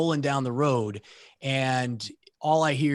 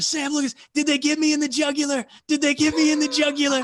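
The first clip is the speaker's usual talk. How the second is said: high, loud, acted frantic freaking-out voice; 5 dB louder than usual. Retelling a comrade bleeding in the turret: imitating Hollywood freaking out. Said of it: "He starts freaking out".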